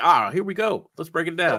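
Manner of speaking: mock logical, high, analytical breakdown tone. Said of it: "y'all come so l-, logistic with it".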